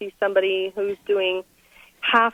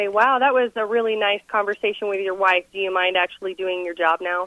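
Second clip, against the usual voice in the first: usual speaking voice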